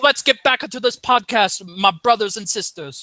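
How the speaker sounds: horrible, clumsy, fake amateur Jamaican accent. A podcast host, mid-bit, speaking in a horrible jamaican accent. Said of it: "That was a horrible Jamaican accent".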